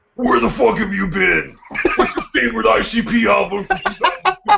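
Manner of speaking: high, growled, interrogating voice.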